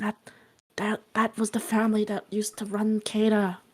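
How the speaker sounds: soft, hushed half-whisper, very close. Voicing a character who half-whispers into another character's ear: half-whispering. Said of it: "Cat's going to whisper in Sam's ear".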